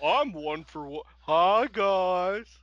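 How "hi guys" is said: slow put-on children's tv dinosaur voice. Greeting the others in a put-on voice: slowed-down Barney-like voice. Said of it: "now you're slowing it down".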